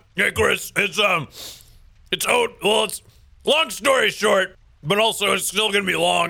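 mouth full while speaking. Answering the podcast host's question, talking with a full mouth. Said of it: "Sorry, I got stuff in my mouth".

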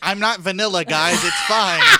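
very loud, high, swooping, animated sing-song. Teasing a fellow speaker about her sex stories by imitating Tracy. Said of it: "This is Tracy being like".

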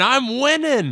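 piercing, very high shrieking scream. A narrator pitching a scene voices Mark shooting dart-gun targets: Mark screaming. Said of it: "he's screaming".

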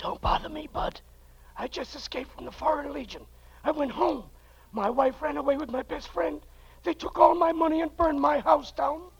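hushed, whispering voice. Answering a stranger who asks where to buy a camel: whispering. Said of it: "Why do you think I'm whispering?".

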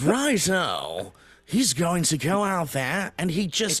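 very posh, upper-class British accent. Asked for a very posh british accent, the speaker delivers a line in it. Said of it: "it got even more upper class".

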